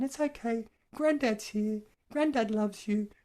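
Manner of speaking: soothing and tender, soft, gentle, pitched very high. A grandfather shows how he talks to his baby grandchildren: soft, gentle tone. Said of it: "in a really soft and gentle tone".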